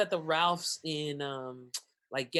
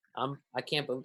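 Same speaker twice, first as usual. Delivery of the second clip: put-on tearful, choked-up voice, lower; 3 semitones lower than usual. Retelling how a man talked in a post after coming back: imitating someone choking up. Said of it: "choking up, trying to talk".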